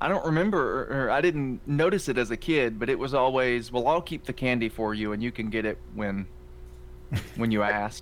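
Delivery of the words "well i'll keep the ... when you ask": normal talking voice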